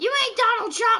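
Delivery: play-acted grandma voice, loud, high yelling. Acting out the grandma yelling upstairs: imitating a grandma yelling. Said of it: "your grandma just yells upstairs".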